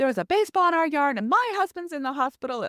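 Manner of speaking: high, loud yelling.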